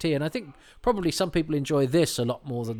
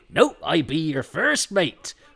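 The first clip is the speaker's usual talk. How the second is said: pirate-style, loud, drawn out; 3 semitones higher, 5 dB louder than usual. Acting out a first mate's reply in a pirate exchange, First Mate Trask pirate voice. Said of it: "why are you talking like you're not a pirate".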